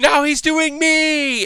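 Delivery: play-acted, very high, drawn-out, thrilled, delighted exclamation. Retelling a scene where a character sees herself imitated: imitating someone excited. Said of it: "so genuinely excited".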